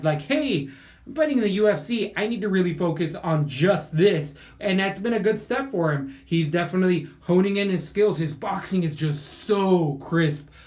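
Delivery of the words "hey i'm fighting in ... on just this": ordinary talk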